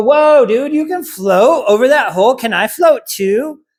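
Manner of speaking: high dog voice. Showing what the dog will think on seeing the raised foot: voicing the dog's thoughts. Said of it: "he's gonna go".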